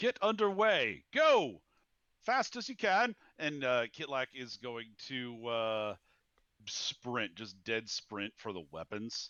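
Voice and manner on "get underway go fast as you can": very high, shrill, loud and urgent shouted yell. Voicing a character ordering the ship to get underway: yelling. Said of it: "Kitlak's going to yell out".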